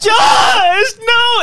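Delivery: very high, very loud, shrill tearful crying. Retelling how she found the room empty: imitating someone crying. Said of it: "And she started crying".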